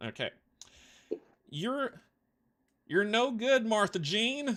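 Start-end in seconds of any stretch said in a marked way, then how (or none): 1.5-4.6 put-on higher-pitched, mumbled country accent. Voicing an old man in a roleplaying game, in a country accent. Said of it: "I do a country accent really well".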